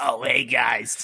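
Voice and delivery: put-on old smoker voice. Trying out a character named Johnny in a game: Johnny's voice. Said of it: "what if that was Johnny's voice?".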